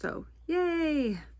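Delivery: high, cheery, mock-cheerful yay.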